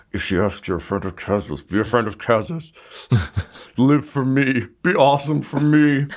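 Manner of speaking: low grumbling spoken aside. Voicing a recruit who failed a test, telling friends: muttering to friends. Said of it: "he's just muttering to his friends".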